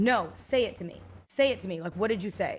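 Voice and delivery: ordinary talk, nothing marked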